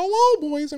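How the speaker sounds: bad, very high, squeaky cartoon mouse voice. Speaker tries a voice for the audience, Mickey Mouse voice. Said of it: "I'm going to do my Mickey Mouse voice".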